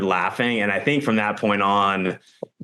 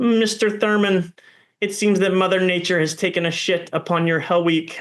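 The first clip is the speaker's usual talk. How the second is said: very high-pitched, nasal, put-on voice; 10 semitones higher than usual. Recalling cold water during Hell Week, quoting Helwig: Helwig's nasally voice. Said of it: "that was his voice, this like nasally voice".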